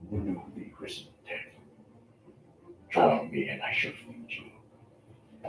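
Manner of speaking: hushed, very quiet, whispered creature voice. Narrating a game, voicing a creature looking down at the player, creature muttering. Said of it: "But you look up to this creature standing above you as it mutters something in language that probably you don't understand".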